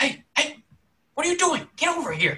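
sharp hushing whisper. Narrator voices someone at a window calling to the group, sharp hushing whisper. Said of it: "barks out to you guys in a very like sharp, hit, like hushing tone".

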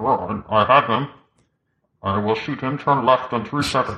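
muffled voice, as through a mask. Mocking an actor in Dunkirk who sounds different from everyone else, talking like wearing a mask. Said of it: "he clearly is talking like he has a mask on".

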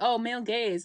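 normal talking voice

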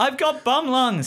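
very high, all-out, top-of-lungs screech. Voicing a character after a failed roll: shouting at the top of his voice. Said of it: "says Jonas at the top of his voice".

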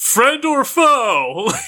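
high, loud shouted call. Calling out in character toward the darkness: yelling out. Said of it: "And just yell out, like".

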